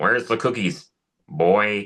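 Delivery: slow cartoon dad style voice. Retelling a cartoon bit where Homer finds the cookie tray empty: Homer voice. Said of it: "do my old school Homer voice".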